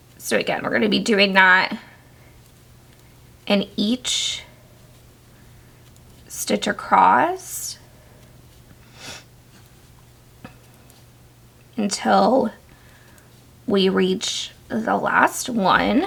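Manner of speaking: rough, scratchy voice. Showing a crochet row step by step: raspy voice from allergies. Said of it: "I'm so sorry if I sound raspy".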